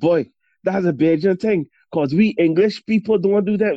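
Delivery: put-on Bajan accent. Retelling what you would say about getting into trouble at school in England, in a full Bajan accent. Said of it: "with a full Beijing accent".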